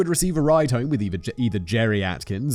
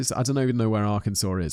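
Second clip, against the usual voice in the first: ordinary delivery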